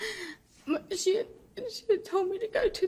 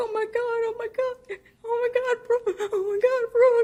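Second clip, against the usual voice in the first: re-enacted screaming; 3 semitones higher, 4 dB louder than usual. Rhonda retells opening the car door and finding someone left inside: retelling a scream. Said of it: "And I was screaming".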